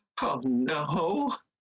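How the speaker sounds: whimpered, whining little cry. Voicing a character who dashes into a corner mid-fight: whimpering.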